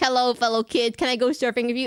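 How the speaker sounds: mock awkward try-hard voice. Describing an actor's awkward attempt to fit in with younger people, doing an impression of him, imitating an awkward try-hard. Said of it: "him trying to do like it's like it's this hello fellow kids moment".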